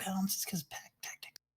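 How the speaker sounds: unvoiced whispered aside.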